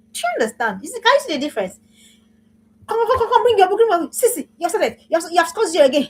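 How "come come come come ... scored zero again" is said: high, belittling, demoralizing, scolding nagging voice. Showing how parents talk to daughters: demoralizing nagging parent. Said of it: "that demoralizes them".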